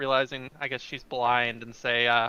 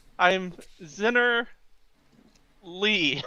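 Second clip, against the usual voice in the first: really slow, carefully drawn-out, pitched-up speech; 5 semitones higher than usual. Greeting another character in a tabletop game, speaking really slowly. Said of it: "Still speaking really slow".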